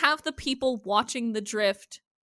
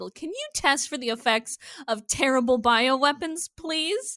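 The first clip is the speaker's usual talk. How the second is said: put-on very loud voice, higher pitch; 3 semitones higher than usual. Retelling a character's request in a crowded hospital: imitating someone saying it very loudly. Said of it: "I'm saying this very loudly".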